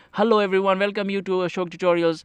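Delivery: quick, rushed, rattled-off delivery. Showing the usual opening greeting of a video, said fast. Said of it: "So I'm saying it fast fast".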